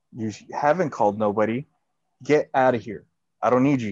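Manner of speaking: imitated stern tone and attitude. Retelling telling off a worker, not yelling: imitating own stern tone. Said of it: "stern or this attitude".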